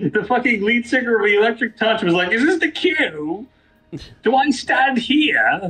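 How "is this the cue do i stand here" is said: put-on British accent, very slow, one word drawn out. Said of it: "the singer's British".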